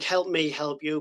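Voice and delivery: ordinary delivery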